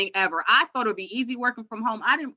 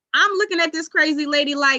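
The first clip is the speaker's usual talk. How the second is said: usual speaking voice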